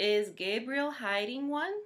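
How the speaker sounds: "one" with questioning tune, pitch climbing. Modelling for students which end mark fits a sentence: rising pitch at the end. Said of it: "Notice how [name]'s sound went up".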